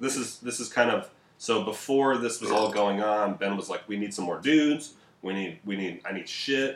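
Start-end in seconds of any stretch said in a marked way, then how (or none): none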